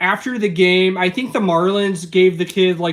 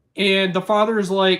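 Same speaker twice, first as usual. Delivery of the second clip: ordinary talk, nothing marked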